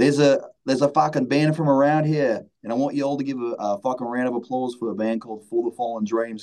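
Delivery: bad fake Australian announcer voice. Retelling a stage announcement made between songs, in a terrible australian accent. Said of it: "I'm gonna do a terrible Australian accent".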